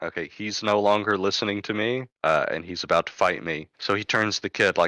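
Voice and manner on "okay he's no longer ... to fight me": ordinary talk, nothing marked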